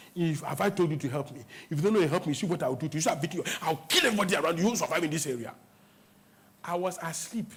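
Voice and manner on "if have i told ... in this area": ordinary delivery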